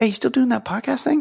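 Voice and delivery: very high, rough, creaky, casual tone. Doing an impression of anyone known in real life asking about the podcast. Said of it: "here's an impression of anyone I know in real life".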